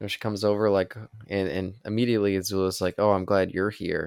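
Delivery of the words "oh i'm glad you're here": put-on mock-sarcastic tone. Recapping a scene, quoting a character greeting her friend, mock-sarcastic. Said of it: "Some sarcasm".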